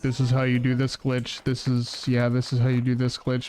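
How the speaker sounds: flat, dead-level, stone-cold monotone drone. Imitating runners explaining a glitch stone cold, in a flat monotone voice. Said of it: "talking in a monotone voice like".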